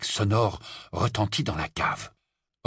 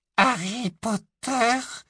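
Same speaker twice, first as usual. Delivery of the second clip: tiny, very high, trembling squeak; 13 semitones higher than usual. Reading the trembling house-elf back in his old masters' house: Dobby's tiny squeaky quaver. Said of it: "couina-t-il d'une toute petite voix chevrotante".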